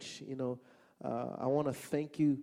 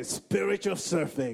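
louder, sermon-style preacher voice; 4 semitones higher, 5 dB louder than usual. Leading an audience to repeat a phrase, demonstrating a preacher voice. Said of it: "get your preacher voice on".

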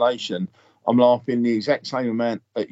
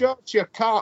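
put-on Scottish accent, very high-pitched; 11 semitones higher than usual. Repeating a character's line from a show, in a Scottish accent. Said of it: "Is that a good accent?".

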